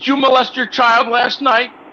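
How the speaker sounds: very high, pointed, accusing tone. Showing how to ask the caller the question: accusatory question. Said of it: "You say it in a way like this".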